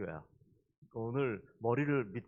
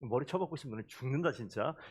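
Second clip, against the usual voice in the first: normal talking voice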